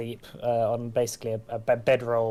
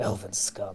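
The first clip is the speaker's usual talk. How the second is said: muttered mumble under the breath; 3 semitones lower, 3 dB quieter than usual. Voicing the captain of the guards in the carriage, muttered under breath. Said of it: "he he mutters under his breath".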